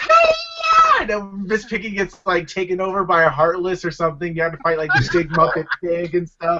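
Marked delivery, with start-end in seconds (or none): 0.0-1.0 very high voice, yeah stretched out long. Joking about a game with Muppets, Miss Piggy voice. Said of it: "Miss Piggy's like".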